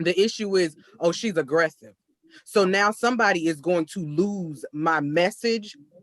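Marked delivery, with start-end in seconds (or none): none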